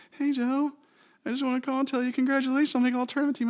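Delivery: put-on very high, fast, childlike little kid voice.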